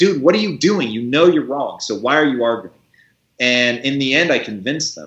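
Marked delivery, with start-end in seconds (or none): 0.0-2.8 yell held mild, restrained. Retelling an argument in a meeting: imitating an inner voice screaming. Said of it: "a voice is screaming".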